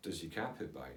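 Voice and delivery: bone-dry, serious, dead straight deadpan delivery. Telling a story about trying to seem normal, retelling a deadpan remark. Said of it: "So in a deadpan way".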